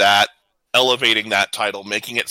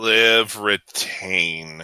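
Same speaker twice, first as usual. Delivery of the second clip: slow, disappointed delivery. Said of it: "You sound so disappointed".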